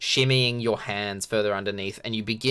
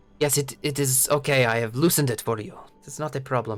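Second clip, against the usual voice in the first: fake Spanish-sounding accent; 3 semitones higher than usual. Voicing a young gnome replying at the boulder, Spanish-sounding accent. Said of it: "Why am I Spanish now?".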